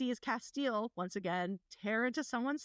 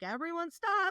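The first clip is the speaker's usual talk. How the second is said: high-pitched, loud holler; 6 semitones higher, 3 dB louder than usual. Recapping a story's climax for listeners, retelling a holler. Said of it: "she just kind of hollers out".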